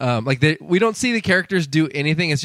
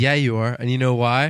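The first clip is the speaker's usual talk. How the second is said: plain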